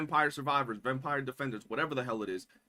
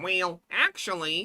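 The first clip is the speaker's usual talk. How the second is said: put-on nerdy voice, much higher pitch; 4 semitones higher, 3 dB louder than usual. Creator recalling the voice they used in one of their videos, nerd voice. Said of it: "I did a nerd voice".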